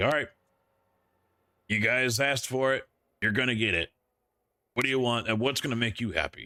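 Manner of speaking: mock fed-up, rushed, angry tone. Retelling how a man reacted when the group rejected it, imitating him getting angry. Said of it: "he's getting all like angry and you could hear it in his voice".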